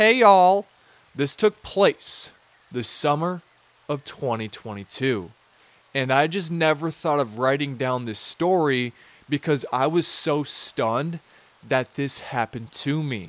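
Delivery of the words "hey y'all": loud, mocking, put-on Southern accent. A storyteller opens a story with a greeting in a mocking southern accent. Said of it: "so I'm mocking them".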